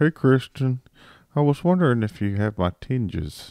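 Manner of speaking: play-acted tipsy, boozy, drunk-sounding voice. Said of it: "he sounds drunk".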